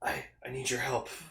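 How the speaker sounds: deep, very quiet voice. Imitating how he sounds speaking Japanese to Haruki: deeper Zed voice. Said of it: "you can hear his voice is, like, kind of, like, deeper".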